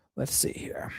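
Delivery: soft, unvoiced whisper. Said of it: "reading chat to herself".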